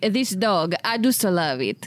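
put-on Italian accent. Speaker quoting his own line from John Wick 3: Italian accent. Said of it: "My Italian phrases".

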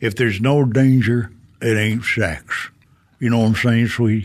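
put-on Deep South Alabama accent with drawl. Retelling what a co-star from Alabama told her: impression of Alabama co-star. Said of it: "that's a very good impression".

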